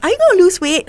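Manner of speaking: prying, high-pitched tone.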